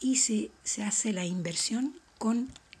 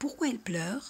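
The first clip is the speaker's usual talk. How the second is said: pitch rises at the end on pleure; 3 semitones higher than usual. Teaching question intonation, voice rises at the end on pleure. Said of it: "Y subimos la voz al final de la pregunta".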